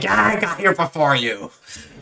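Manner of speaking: put-on childish voice, acting like a child. Retelling a movie scene where Arnold acts childish: imitating Arnold acting childish. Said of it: "Arnold starts acting like a child and he's like".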